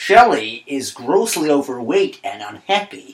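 worst possible, mangled put-on American accent. Quoting the character's opening line about his daughter, in Michael Caine's bad American accent. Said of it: "in the worst American accent possible".

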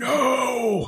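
put-on very high, long, drawn-out yell. Retelling how they reacted when told to push play, yelled no. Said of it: "I yelled it like that".

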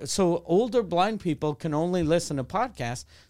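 usual speaking voice

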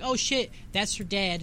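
ordinary talk, nothing marked

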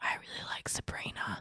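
hushed, soft, breathy whisper. Mocking a show character who comes in and whispers: Nick whispering.

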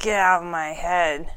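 snarled delivery. Voicing a character who shakes off a mind intrusion: snarling. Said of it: "this snarl kind of crosses her face".

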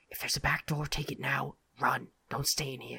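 quiet whispered aside. A player voicing their character during a tabletop game, an under-breath whisper. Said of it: "I'll just kind of like under my breath go".

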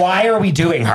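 ordinary talk

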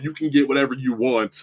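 ordinary talk

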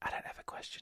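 barely audible, hushed, breathy whisper. Retelling what a younger participant said during the first round of questions: whispering. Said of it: "She's whispering already".

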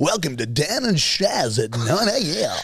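put-on old-school morning radio DJ patter. Hosts improvise a new segment, opening the show as a 90s radio host. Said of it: "Just pretend to be a radio host from the 90s".

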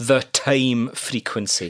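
said slowly, drawn out, with pitch falling at end.

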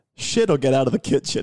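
ordinary delivery

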